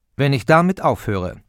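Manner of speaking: ordinary talk, nothing marked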